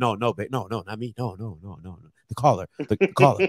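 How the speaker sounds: nervous, flustered, tumbling, stammering voice. Retelling his own denial to his partner: imitating his own nervous denial. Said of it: "I was like".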